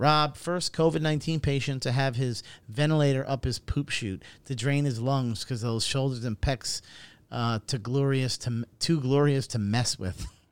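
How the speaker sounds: plain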